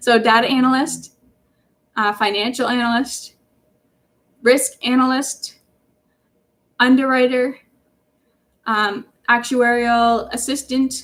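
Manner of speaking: slow, deliberate, spaced-out delivery. Repeating job titles for listeners who may be writing them down: saying it slower. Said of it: "I'll say these slower".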